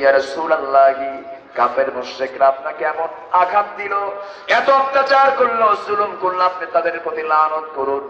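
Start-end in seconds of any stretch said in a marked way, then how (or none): none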